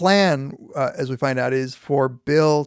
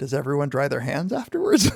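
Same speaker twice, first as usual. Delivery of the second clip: put-on dry, wry, swooping delivery. Retelling a favorite line of Alma: dry Alma delivery. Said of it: "she just very dryly says".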